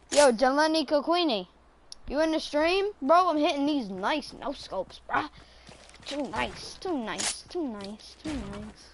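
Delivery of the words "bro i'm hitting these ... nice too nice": rough-edged, hyped streamer voice. Bragging about hitting no-scope shots in the game: rough PewDiePie-like voice. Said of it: "Are you trying to sound like PewDiePie?".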